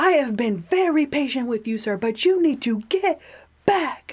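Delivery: play-acted, high-pitched, angry cop going off. Retelling what the cop said when he went off at the speaker, imitating a cop going off. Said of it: "the cop goes off, and he's like".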